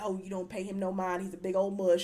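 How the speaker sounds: mock elderly Southern woman voice. Describing characters who sound like church ladies back home, quoting Martha, Martha's down-south old lady voice. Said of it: "they sounded like good old down south home".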